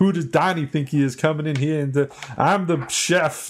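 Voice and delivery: put-on Boston accent. Quoting the brother who runs the restaurant, in a fake Boston accent. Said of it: "That's my Boston accent".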